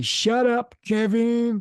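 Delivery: ridiculous, silly, very high squeak. Quoting a puppet character's catchphrase: ridiculous annoying Roland Rat voice. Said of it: "had this ridiculous, annoying voice".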